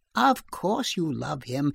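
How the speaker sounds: ordinary delivery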